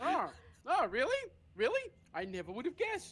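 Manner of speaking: high, loud, sarcastic mock surprise.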